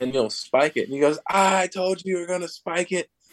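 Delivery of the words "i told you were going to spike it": mock, jeering, taunting shout, pitched high. Retelling what he yells once the speaker spikes the ball: retelling a yell. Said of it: "he's just yelling at you the whole time".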